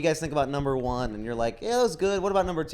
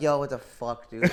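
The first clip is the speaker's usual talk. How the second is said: thrown, caught-off-guard, flustered outburst. Imitating a comic walking up to the stage after a roasting intro: imitating Nick flustered. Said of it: "He always walks up flustered".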